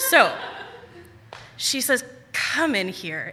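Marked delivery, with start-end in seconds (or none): 2.3-3.3 drained, bone-tired, exhausted, worn-out voice. Retelling how a woman with a baby called her oldest child in, imitating a very tired voice. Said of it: "in the most tired voice that I can think of".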